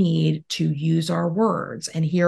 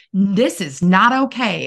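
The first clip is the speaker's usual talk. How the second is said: slow, stern voice; 2 semitones higher than usual. Imagining Miss Carlisle coming into Timothy's space, Miss Carlisle's put-on stern voice. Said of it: "talking to him in a stern voice".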